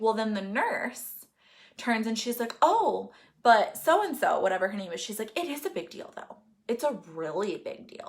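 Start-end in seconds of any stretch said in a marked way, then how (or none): 5.4-8.1 put-on heavy sarcastic mocking tone, quieter. Retell how the nurse turned and answered while you were crying, imitating a super sarcastic nurse. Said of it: "super sarcastic. her tone was literally like she was mocking me".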